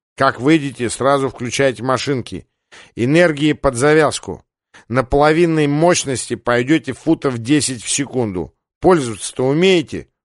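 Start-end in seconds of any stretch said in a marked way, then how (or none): none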